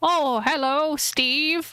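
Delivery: put-on elderly man's voice. Voicing an old man at a pawn shop greeting the players: voicing an old man. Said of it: "he goes up and he looks at you and he's like".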